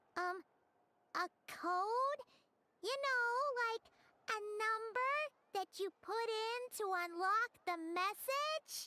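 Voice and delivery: very slow, deliberate, drawn-out speech. Explaining to a robot what a code is, speaking very slowly. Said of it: "Why is she speaking so slowly?".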